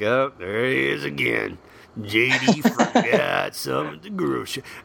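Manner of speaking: creaky mock voice, put-upon and aggrieved.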